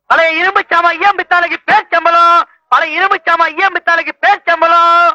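loud street hawker's calling cry.

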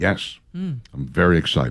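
unconvincing excitement with swooping pitch. Answering a co-host who mentions fan mail: unconvincing excitement. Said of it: "The way you're saying it".

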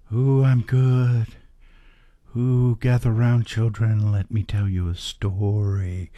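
eerie, spooky ghost-story teller voice, drawn out. Asked how they are today, answering in a spooky ghost voice. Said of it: "you're talking like a ghost".

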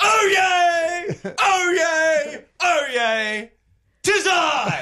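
flamboyant town crier voice. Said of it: "More flamboyant".

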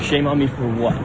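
ordinary talk

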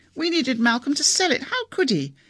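high, vibrating, quavering voice verging on hysteria. Anna speaks after news of a murder, in a high, vibrating, hysterical voice. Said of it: "a high, vibrating note in Anna's voice that suggested hysteria".

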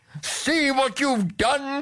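very high, crying-out exclamation. The king, with the palace gossiping about his daughter, crying out to her. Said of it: "cried the king".

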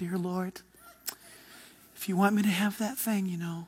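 soft, hushed, mock pious praying tone.

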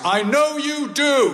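loud, carrying, very high-pitched voice. Retelling the father's words as the speaker leaves the hospital ward, loud voice. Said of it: "I hear my dad say in a loud voice".

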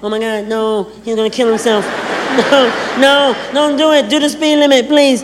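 woman's voice, panicked, frantic and pleading. Burning out his tires with a woman riding along: mock-panicked impression of women. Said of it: "That's my impression of women".

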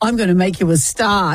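ordinary talk

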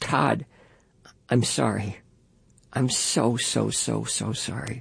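strangled, choked, barely audible, low. Narrating a story where a stunned man finally speaks, in a choked, barely audible voice. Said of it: "in a choked, barely audible voice".

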